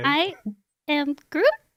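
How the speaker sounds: put-on high-pitched, as babyish as possible. After being told to try again, a speaker delivers it in a baby Groot voice. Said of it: "Just as baby a voice as you can".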